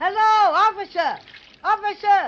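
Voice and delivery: big-voiced, loud, high hollering. Calling to a policeman who did not hear the first shout: yelling in a big voice. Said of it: "It takes a big voice like mine to do the trick".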